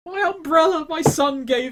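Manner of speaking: put-on very high, furious, angry old lady voice. Voicing an old lady whose umbrella got shot full of holes: angry old lady. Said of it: "The old lady is fucking angry".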